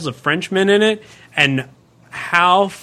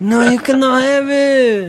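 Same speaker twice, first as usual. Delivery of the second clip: higher, slow mock French accent. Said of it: "And then the French would be all like".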